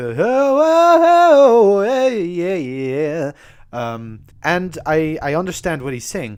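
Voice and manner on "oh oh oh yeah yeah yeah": high, loud, belted mock diva vocal riff. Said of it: "it always sounded like a chore for her to do, like, the".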